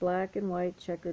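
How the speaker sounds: plain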